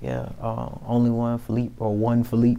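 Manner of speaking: ordinary delivery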